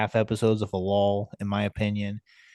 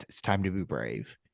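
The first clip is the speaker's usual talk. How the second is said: muttered under breath, quieter, faster; 3 semitones lower, 7 dB quieter than usual. Describing a show character trying to fix something, retelling a muttered line. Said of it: "he mutters under his breath".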